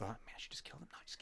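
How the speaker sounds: muttering under breath. Voicing Dren reacting to a kill: whispering to herself. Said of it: "Dren whispering to herself".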